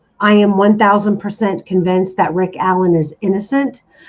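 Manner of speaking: plain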